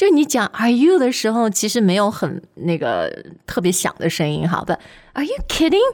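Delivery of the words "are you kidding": stress landing on the word kidding. English tip on saying Are you kidding, stress on kidding. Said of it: "But you really want to stress that kidding part".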